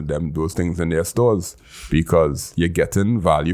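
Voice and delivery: ordinary talk, nothing marked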